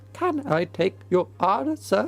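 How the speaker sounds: clown-like voice seesawing between high and low registers. Demonstrating how a voice mixing highs and lows sounds, voice jumping high then low. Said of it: "That sounds like a clown".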